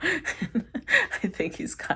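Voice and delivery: talking through laughter. Explaining a tarot card reading, laughing while talking. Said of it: "I'm sorry, I'm not laughing".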